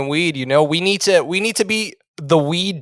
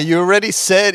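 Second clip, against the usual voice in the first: plain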